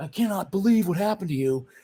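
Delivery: very high, excited-angry ranting outburst. Retelling a man's reaction to what happened to the speaker, imitating excited anger. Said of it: "excited and pissed at the same time".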